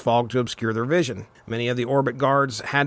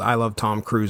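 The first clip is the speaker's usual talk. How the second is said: ordinary talk, nothing marked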